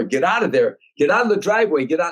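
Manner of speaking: put-on, high, urgent hollering. Retelling warning comedians out of a driveway as a car comes: retelling a holler. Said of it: "I holler".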